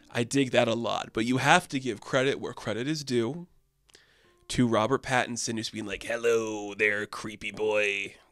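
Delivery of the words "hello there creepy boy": odd, fully committed, drawn-out strange voice. Praising an actor's film role, speaker imitates Robert Pattinson's weird voice. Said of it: "doing a weird voice".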